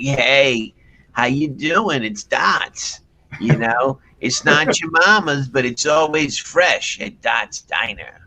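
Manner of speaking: slow, heavy chain-smoker's voice. Retelling a woman's commercial for a diner, the speaker imitates her heavy smoker's voice. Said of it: "she talks like this".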